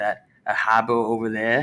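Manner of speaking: put-on Boston accent, r dropped, "harbor" as "habo". Joking with another speaker about accents, Boston accent. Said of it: "something with a car or harbor".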